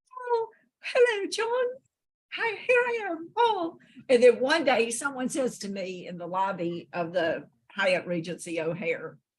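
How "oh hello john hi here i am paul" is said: put-on cartoon mouse voice, higher pitch. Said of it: "supposed to be doing Paul and not Mickey Mouse".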